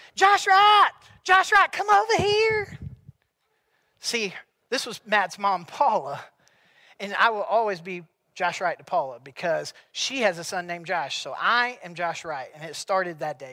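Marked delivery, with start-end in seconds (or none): 0.1-2.7 very high, loud, shrieking scream. Retelling a woman in a car line calling to him: imitating a woman screaming. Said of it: "she starts screaming".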